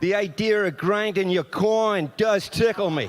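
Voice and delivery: loud put-on New York accent. Reading a line in a group accent game, in a New York accent. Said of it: "Should we do a little New York accent?".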